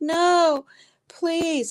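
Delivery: high, acted crying, half-screaming with a begging tone. Retelling pleading not to be taken to hospital: retelling her own half-screamed plea. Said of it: "I was half screaming".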